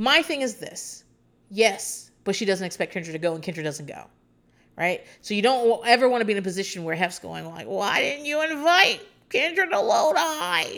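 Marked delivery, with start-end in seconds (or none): 7.7-10.8 high, slow, put-on creepy old-man voice. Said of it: "What the fuck was that voice?".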